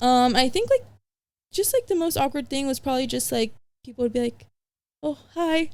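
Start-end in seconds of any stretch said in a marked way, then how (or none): 5.0-5.7 acted, high-pitched, jittery, super-nervous voice. Retelling how people in interviews greeted them: imitating someone super nervous. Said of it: "super nervous".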